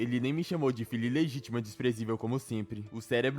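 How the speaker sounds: usual speaking voice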